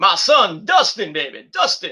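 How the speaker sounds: swooping, sing-song wrestling-promo voice, pitch swinging widely. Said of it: "You like my Dusty Rhodes impression?".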